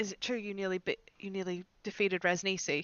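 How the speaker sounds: hushed half-whispered delivery. Crouching to speak to a chained lizard prisoner: half-whispering in character. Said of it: "I'll whisper to the lizard folk".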